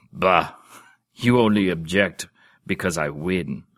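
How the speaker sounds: scornful, disgusted grunt. Reading a duke's retort during a quarrel: disgusted grunt. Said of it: "grunted in disgust".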